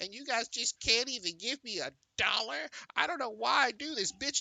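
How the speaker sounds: very high, whining, griping tone. Retelling what a streamer said on stream, imitating someone complaining. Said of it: "If you complaining like that".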